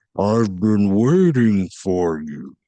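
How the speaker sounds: really deep, booming, towering giant voice. Narrating a towering giant who speaks to you, in a really deep voice. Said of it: "you hear in a really deep voice".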